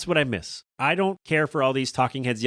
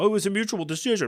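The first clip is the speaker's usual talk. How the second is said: smooth, pitched-up corporate executive voice; 7 semitones higher than usual. Acting out a mock argument with an ESPN suit: imitating an ESPN suit. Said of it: "my impression of me arguing with a suit".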